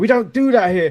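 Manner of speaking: loud, high-pitched, tough enforcer voice. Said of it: "Robert Stone going".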